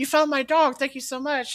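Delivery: high-pitched lady's voice. Retelling meeting a lost dog's owner, quoting her in a lady's voice. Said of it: "in a lady's voice".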